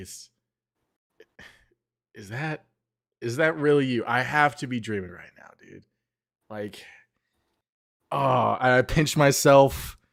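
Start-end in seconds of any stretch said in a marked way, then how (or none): 0.0-5.8 stunned, incredulous, halting, disbelieving delivery. Stepping forward in character toward someone from a vision: in disbelief. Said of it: "I'm in disbelief".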